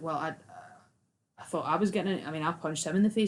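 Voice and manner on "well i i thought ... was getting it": usual speaking voice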